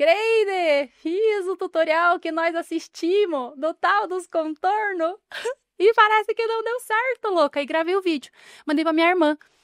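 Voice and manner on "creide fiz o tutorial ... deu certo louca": put-on slow, theatrical, drawn-out yelled lament. Retelling shouting into the phone to record a video: imitating own past shout. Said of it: "peguei o celular e gritei".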